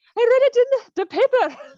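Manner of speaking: put-on high, slow, laid-on Scottish accent. Retelling a movie mother talking about the paper, Mike Myers impression. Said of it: "You do an amazing Scottish accent".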